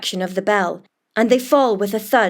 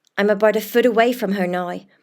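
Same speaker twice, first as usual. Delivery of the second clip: usual speaking voice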